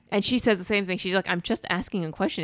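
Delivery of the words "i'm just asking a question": ordinary talk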